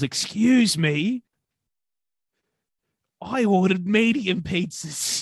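yelled out, high, very slow and drawn out. Retelling a customer's outburst in the kitchen: imitating a customer yelling. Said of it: "And she yells".

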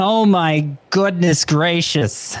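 high, drawn-out exclamation, very slow. Asked to open a segment, doing the Susan Waldman impression. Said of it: "hit me with your best Susan Waldman impression".

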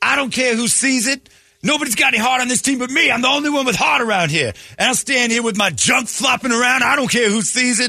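shrill, very high, ranting yell. Retelling what a man yelled in front of everybody, retelling a yell. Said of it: "as he's yelling".

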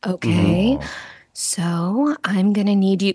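put-on calm voice, sounding forced. Retelling a phone call from a sliding car: imitating a calm mom voice. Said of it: "the mom calm voice".

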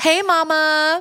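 mock sleazy hey mama, high, slow and drawn out.

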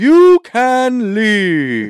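very high, booming, wild, swooping delivery. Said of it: "She always sounds like, like the Wizard of Oz".

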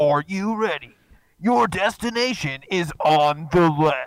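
loud, hyped, pumped-up radio DJ announcer voice. Speaker wishes the GPS spoke in a radio-station voice; Hot 97 radio voice. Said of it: "I want like the Hot 97 CBS bangers voice".

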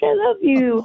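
put-on talking in a baby-talk voice. Retelling how the speaker talks to the dog: imitating own baby voice. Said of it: "talking to him in a baby voice".

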